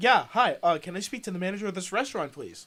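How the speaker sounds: plain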